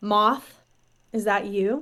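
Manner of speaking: slow, dazed, unsure mutter under the breath. Voicing a character who was knocked upside the head, asking Pyrrha: said under her breath. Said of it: "she kind of says under her breath".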